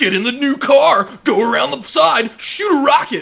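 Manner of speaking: very high, drawn-out nineties commercial announcer voice. Imitating the voiceover in nineties cartoon ads for action figures. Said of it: "talk like the guy who does the voiceover in cartoons from the nineties about action figures".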